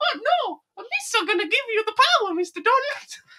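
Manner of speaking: very high-pitched, loud cartoon voice. Trading impressions about a movie scene: Jar Jar Binks impression. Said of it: "my Jar Jar Binks impression".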